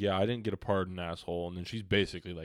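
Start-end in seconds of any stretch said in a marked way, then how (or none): none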